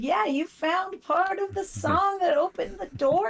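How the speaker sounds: put-on sarcastic woman's voice. Imitating a game character's line: imitating a sarcastic lady. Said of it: "the lady was sarcastic every time".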